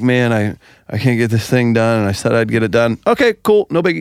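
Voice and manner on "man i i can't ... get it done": put-on upset, emotional, apologetic voice. Retelling how an emotional friend reacted: imitating emotional Justin. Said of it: "Justin's like".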